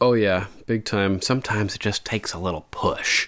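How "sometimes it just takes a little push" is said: whispered, breathy, sinister, crazed villain voice. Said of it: "you do that voice way too good".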